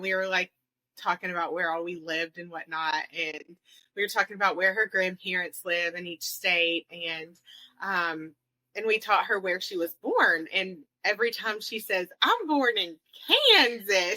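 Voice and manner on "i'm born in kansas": put-on very slow, high, drawn-out, hickest country accent. Quoting her saying where she was born, the speaker does a hick country accent. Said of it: "this most hick country accent".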